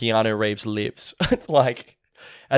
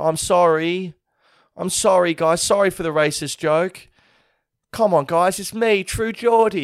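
play-acted tearful, weepy, high crying voice; 7 semitones higher than usual. Imitating a YouTuber's crying apology video: imitating True Geordie crying. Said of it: "you're editing the videos yourself of you crying, being like".

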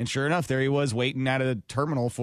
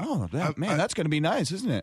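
put-on, overly interested voice, pitched higher; 4 semitones higher than usual. Retelling meeting a fan-friendly celebrity: imitating Common sounding very interested. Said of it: "he was like".

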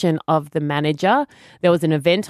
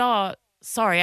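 ordinary talk, nothing marked

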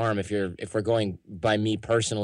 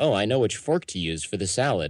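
ordinary talk

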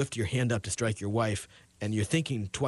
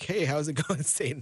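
put-on flippant, mock-casual delivery, higher; 6 semitones higher than usual. Acting out a heavenly conversation from the book of Job: put-on flippant tone. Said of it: "I'm being flippant".

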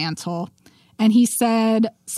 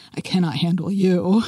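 put-on sultry voice, lower; 3 semitones lower than usual. Retelling a scene where a man answers a woman, imitating William's sultry voice. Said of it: "in like this really sultry voice".

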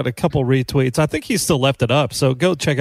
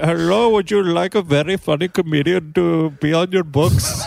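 put-on Sri Lankan accent, pitched up; 5 semitones higher than usual. Asked how it sounds when approaching agencies, put-on Sri Lankan accent. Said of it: "I put on my Sri Lankan accent".

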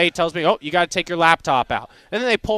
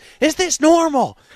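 mock very high, freaked-out, panicked scream; 10 semitones higher, 4 dB louder than usual. Retelling a loud flight where the woman in the next seat panicked: imitating a scream. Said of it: "She screams".

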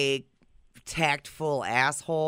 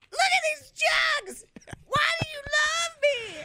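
put-on wife voice, higher pitched. Doing an impression of Christy after being asked: imitating Christy. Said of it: "you gotta do an impression of Christy".

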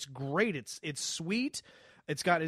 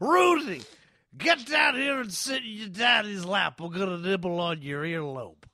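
put-on comic drunken voice, slow and loud; 2 semitones higher, 5 dB louder than usual. Doing a drunk Bill Cosby impression after being asked about it. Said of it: "a drunk Bill Cosby".

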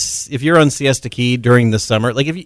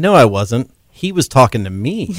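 normal talking voice

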